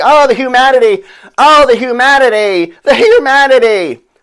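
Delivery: slow, high, loud, drawn-out wailing scream. Retelling a man with a microphone on the Hindenburg: imitating someone screaming. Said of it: "and he's screaming".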